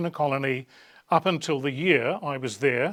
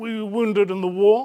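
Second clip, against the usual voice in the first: attempted British accent, raised and high-pitched; 7 semitones higher, 6 dB louder than usual. Retelling speaking to a soldier in a line, making conversation: put-on British accent. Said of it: "my best British accent".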